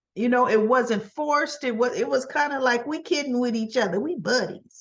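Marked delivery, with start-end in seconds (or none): none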